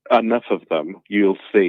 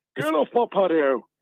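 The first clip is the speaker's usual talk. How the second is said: high, posh put-on voice like a country-house gent. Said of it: "you sound quite posh all of a sudden".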